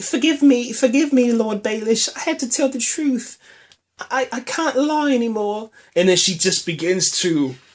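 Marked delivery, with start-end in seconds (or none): 0.0-5.7 put-on pitched-up upper-class lady accent. Retelling a scene, the speaker voices her addressing Lord Baelish: Lady Sansa accent. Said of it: "I gotta go into the Lady Sansa accent".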